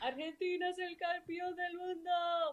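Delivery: very high-pitched soccer match commentator voice. Recalling Argentina's World Cup win, the speaker imitates the soccer commentator. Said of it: "I wanted to sound like the commentator".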